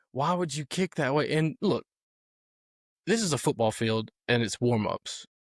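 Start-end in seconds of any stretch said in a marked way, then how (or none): 0.2-1.4 mock half-shouted, mild yell. Retelling what people at the field yelled: imitating people yelling. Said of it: "there's people yelling".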